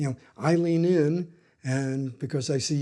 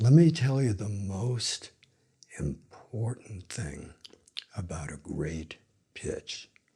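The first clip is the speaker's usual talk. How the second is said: very low, weighty, grave voice with gravitas; 7 semitones lower, 4 dB quieter than usual. Demonstrating how a good speaker takes the voice down: lowered pitch with gravitas. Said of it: "I take it down, I get gravitas behind my words".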